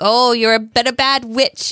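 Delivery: put-on taunting voice. Retelling how Sam taunted someone stuck in a device: imitating Sam taunting. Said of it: "and he kept taunting him, like".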